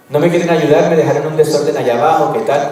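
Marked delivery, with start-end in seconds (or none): none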